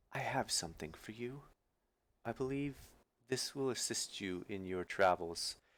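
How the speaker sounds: hushed, very quiet voice brought way down. Game master as the dryad, speaking to Kiva, in a lowered voice. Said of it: "just kind of lowers her voice a little bit".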